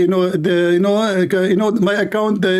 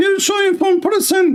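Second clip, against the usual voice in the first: mocking put-on female voice, much higher, slower; 12 semitones higher than usual. Scolding a person who opposed the boycott, in a mocking put-on female voice. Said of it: "make his voice to speak like a female".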